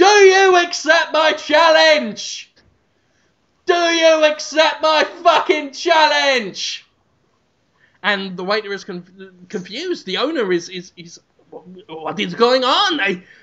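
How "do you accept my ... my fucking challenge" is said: mock shouting, much higher, slower. Retelling a man banging on a door with a trident, retelling a shout.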